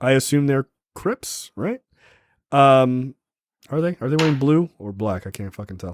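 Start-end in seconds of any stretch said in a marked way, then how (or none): none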